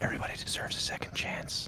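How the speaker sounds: whispering in character. Playing a character, whispering into a dying man's ear: whispering in character. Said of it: "I'm gonna whisper in his ear".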